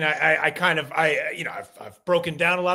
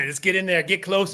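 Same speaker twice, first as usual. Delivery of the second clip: ordinary delivery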